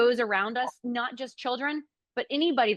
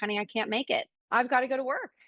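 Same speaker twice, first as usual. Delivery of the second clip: imitated crying, tearful voice. Retelling a call to a daughter about missing an outing: retelling own tearful words. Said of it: "I was in tears".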